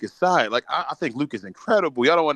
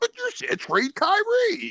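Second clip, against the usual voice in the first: ridiculous put-on voice, much higher. Retelling what people write to him about trading kyrie, in a ridiculous put-on voice. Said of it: "I like how you're using that voice too".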